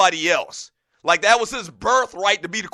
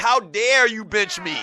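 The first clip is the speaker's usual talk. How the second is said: acted, mock defiant tone. Retelling how a player spoke out against the coach and owners, mock-defiant complaint. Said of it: "he really did it defiantly".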